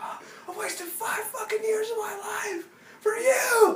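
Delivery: mock, very high, furious, enraged raging yell. Telling a listener how he raged after she came home, imitating his furious rage. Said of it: "Total rage fest".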